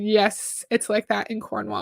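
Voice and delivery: ordinary talk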